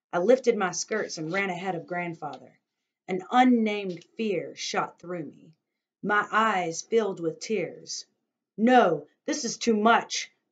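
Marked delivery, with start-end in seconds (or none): 8.5-10.2 loud, angry calling out. Narrator reading Grandfather's line to the man with the cargo, called angrily. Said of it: "Grandfather called angrily".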